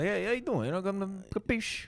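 very high-pitched, put-on Italian man's accent. Showing the other speaker how an Italian guy sounds: put-on Italian guy accent. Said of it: "Italian guy".

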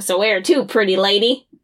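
leering, over-the-top, cartoonishly creepy voice. Recapping an extra episode scene with a guy in a van, imitating a cartoonishly creepy guy. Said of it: "cartoonishly creepy".

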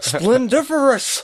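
high, loud, slow boastful showman voice.

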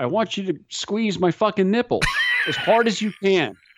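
blurted, high-pitched, exasperated yell. Retelling what she yelled during a skydive briefing: imitating someone yelling. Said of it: "And she yells".

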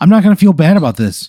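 heated outburst, high, loud and fast.

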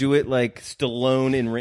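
normal talking voice

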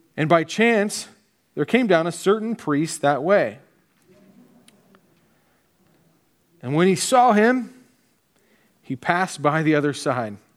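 deliberate, measured, slow, unhurried reading. The speaker reads the scripture passage aloud to listeners: reading slowly. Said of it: "I read it slow".

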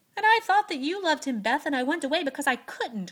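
very loud, high-pitched crying out. Joe tells beth the truth about why she went away, crying out. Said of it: "cried Joe".

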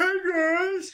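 very high, hollering shout. Retelling how Donatello shouts to the other turtles, like Sloth from The Goonies. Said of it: "Like fucking Sloth from the Goonies".

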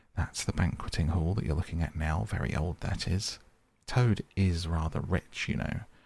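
ordinary delivery

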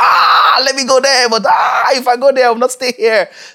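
high, loud, torn excited outburst. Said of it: "so you feel like".

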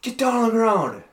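very high, shrill yelling. Retelling what a man running up at him with handcuffs yelled: retelling a shouted order. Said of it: "he's yelling at me".

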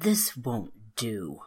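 low, angry, rumbling fairy voice. Narrator voicing a fairy's line to a tired worker, rumbling angry voice. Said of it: "Anger rumbled in the fairy's voice".

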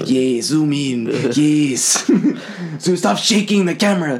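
clumsy, bad, fake Chinese accent. Imagining Chinese viewers watching footage on YouTube, in a bad Chinese accent. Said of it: "Is that a good Chinese accent?".

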